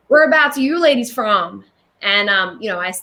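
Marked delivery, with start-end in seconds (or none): 0.1-1.6 terrible fake Southern American accent. Retelling what a man at a blues club asked: terrible impersonation. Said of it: "that was a terrible impersonation".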